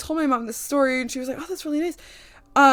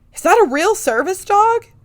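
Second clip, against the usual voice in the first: amazed, really impressed, fascinated, raised and pitched up; 7 semitones higher, 7 dB louder than usual. Retelling what a stranger asked about the service dog: imitating a fascinated stranger. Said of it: "really fascinated".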